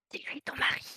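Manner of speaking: whispered, hushed, under the breath. In a role-play scene, the speaker's character leans to another character and is whispering. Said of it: "je chuchote".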